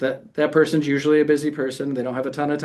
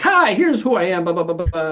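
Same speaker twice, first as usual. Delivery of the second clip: put-on salesy salesperson voice; 4 semitones higher, 4 dB louder than usual. Showing the wrong way to call past a gatekeeper, sounding like a salesperson. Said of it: "I sound like mister Salesperson".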